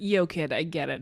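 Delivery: plain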